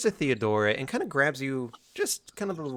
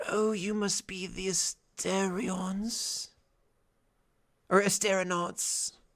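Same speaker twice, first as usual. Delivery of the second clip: barely audible, very hushed, pitched-up voice; 6 semitones higher than usual. Game master voices a character greeting the party: very hushed voice. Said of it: "in a very hushed voice that is just now audible".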